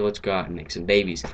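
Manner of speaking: ordinary talk, nothing marked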